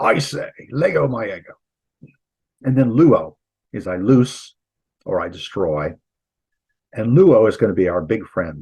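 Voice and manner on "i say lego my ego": deliberate put-on British accent, slow and high. Teaching a memory phrase to the class, saying it with a British accent. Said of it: "You have to do it with a British accent".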